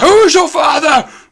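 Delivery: sudden, very high-pitched shout. Telling a story about a man who suddenly yelled, retelling a yell. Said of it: "he just yells".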